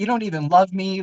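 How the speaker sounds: hurtful, cutting, cruel and harsh. Retelling past replies to their mom's birthday wishes, mock-harsh cruel retort. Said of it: "like cruel and like harsh to her".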